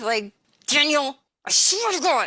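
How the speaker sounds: spoken through tightly clenched, gritted teeth. Demonstrating how to act angry, talking through clenched teeth. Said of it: "It's just talking through your teeth".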